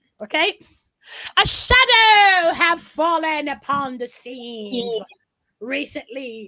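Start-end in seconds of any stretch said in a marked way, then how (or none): 1.4-6.5 raised voice, attempted put-on British accent. Reading a tiny portion of a speech aloud, in a put-on British accent. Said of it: "with a British accent if I can".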